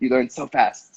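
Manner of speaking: thick, heavy put-on Spanish accent. Recalling what a friend in Spain said to him, Marcel's thick accent. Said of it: "in his like thick accent".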